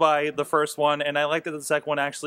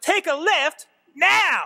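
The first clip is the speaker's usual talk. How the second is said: loud, shrill yelling; 5 dB louder than usual. Describing the Kevin Hart directions voice on Waze, imitating Kevin Hart yelling directions. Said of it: "him yelling at you to turn".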